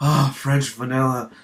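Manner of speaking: mock passionate, swooning delivery. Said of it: "he says it with such a passion".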